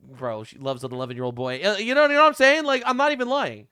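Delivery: plain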